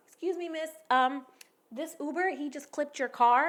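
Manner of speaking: cool, composed, calm, relaxed delivery. Retelling how another speaker calmly told a neighbor about the crash: imitating someone speaking calmly. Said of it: "all calm, like".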